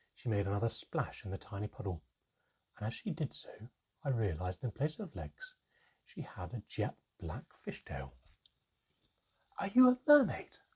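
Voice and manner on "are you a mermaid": gasped, very high and loud. The narrator, noticing the creature's fishtail, asks her: gasped. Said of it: "I gasped".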